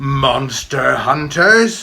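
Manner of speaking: very loud, growling dragon roar. A narrator reads the creature's retort to Tam, growled. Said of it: "growled the creature".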